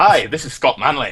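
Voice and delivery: bad, naff put-on Scottish accent. Player in a capsule introducing himself, Scott Manley impression. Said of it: "my Scottish accent's pretty naff".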